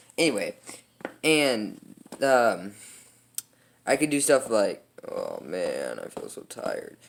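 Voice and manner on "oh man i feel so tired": deep, low, breathy, whispery murmur. Showing how low and high the voice can go: deep voice. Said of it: "kind of go deep without really trying".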